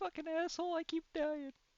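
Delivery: tiny, very high-pitched voice. Speaker voices the resummoned Tick speaking inside someone's head, small voice of Tick. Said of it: "You hear the small voice of Tick".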